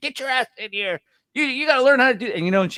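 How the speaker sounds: mock very high, angry, lid-flipping mom scolding rant. Retelling his mother calling him in from a wiffle ball game, imitating an angry mother. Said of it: "flips her lid".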